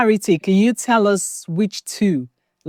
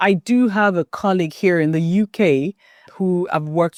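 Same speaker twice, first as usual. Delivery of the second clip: ordinary talk, nothing marked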